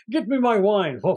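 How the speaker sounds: put-on very British accent. Describing a film's father character, imitating a very British accent. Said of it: "the guy's talking with a very British accent".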